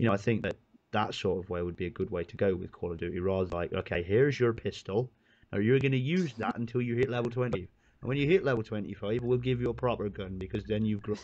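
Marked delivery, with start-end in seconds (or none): 3.7-11.2 put-on rural country farmer accent. Imagining how Call of Duty should hand out guns, in a farmer accent. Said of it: "Why are you talking in a brilliant accent".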